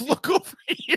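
mock mild shout, high pitched. Retelling a scene where a character screams for a distraction: imitating a scream. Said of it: "she just screams at the top of her lungs".

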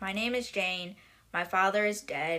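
ordinary talk

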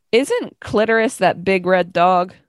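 ordinary delivery

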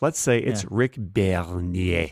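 sudden French accent. A speaker insists the name is French and pronounces it, sudden French accent. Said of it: "when you suddenly go into a French accent".

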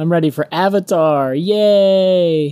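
fake enthusiasm dripping with sarcasm, drawn-out "yay". Answering whether everyone is ready for movie talk: sarcastic fake enthusiasm. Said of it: "That is sarcasm".

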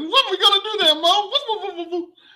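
loud, high-pitched squeal. Imagining a team member acting like one of the Three Stooges: Three Stooges voice. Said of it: "you got the Three Stooges running this band".

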